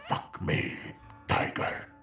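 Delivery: growling monster voice. A talking couch speaks to the narrator, growling. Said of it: "The couch growled".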